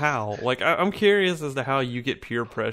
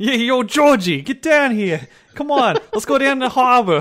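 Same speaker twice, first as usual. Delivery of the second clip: yelled put-on Boston accent, very high and loud; 12 semitones higher, 9 dB louder than usual. Riffing on what a Boston accent sounds like, speaker does a put-on Boston accent. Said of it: "all I fucking hear whenever I think of like Boston accent, you're like".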